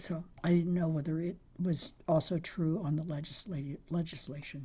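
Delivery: voice fading to a whisper. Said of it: "excuse my voice".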